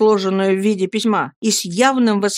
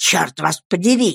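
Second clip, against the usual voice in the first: hissing, much lower pitch; 3 semitones lower than usual. Uriah curses Mr. Micawber after a blow to his hand, hissing. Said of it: "прошипел Урия".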